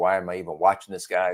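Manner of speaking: plain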